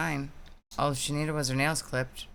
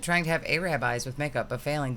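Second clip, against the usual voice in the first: plain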